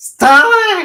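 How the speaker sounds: very high, very loud, shrill voice. Mocking how clips of Dolly always sound: imitating Dolly's annoying voice. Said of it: "it's always with that fucking voice".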